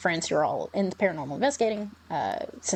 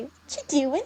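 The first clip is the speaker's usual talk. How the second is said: put-on high, tiny, small child's little girl voice; 8 semitones higher than usual. Retelling what a voice said in their head, in a tiny little girl voice. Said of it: "I heard the tiny girl voice say".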